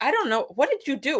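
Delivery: angry put-on Japanese accent. Retelling how a Japanese man looked at him and reacted: mock-angry Japanese accent. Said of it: "to be angry in Jap with a Japanese accent".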